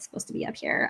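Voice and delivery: soft, whispered scolding tone.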